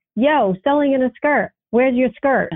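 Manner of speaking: mild teasing call, put-on yelling. Retelling how the young man behind the counter called out: imitating someone yelling. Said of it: "And he yells out".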